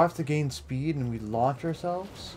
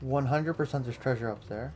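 plain

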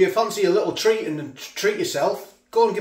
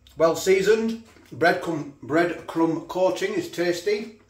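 words mushed and muffled around a mouthful of food. Reviewing food on camera while eating, talking with mouth full. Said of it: "I do apologise for talking with my mouth full".

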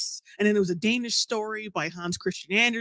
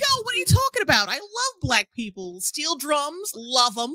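high, swooping put-on sweet lady voice; 5 semitones higher than usual.

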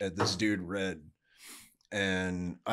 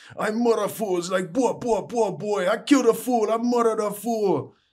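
put-on high, loud yelling in a Jamaican accent. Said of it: "starts yelling in a Jamaican accent".

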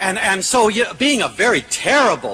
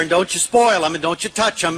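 normal talking voice

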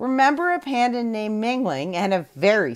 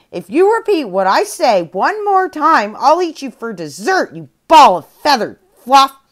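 very loud, enraged, furious angry screaming; 4 semitones higher, 9 dB louder than usual. A panda, angry at a parrot that repeats her words, screams at it. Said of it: "eyes widened in anger and she screamed".

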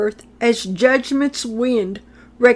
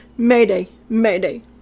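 ordinary delivery

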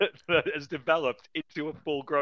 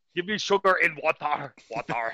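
put-on monster-like alien voice; 3 dB louder than usual. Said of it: "he sounds like fucking Cookie Monster".

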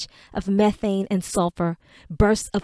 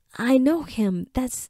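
gasping, higher; 4 semitones higher than usual. Reading a story, Tamuro gets a look at the charred man's face: gasped. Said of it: "Tamuro gasped".

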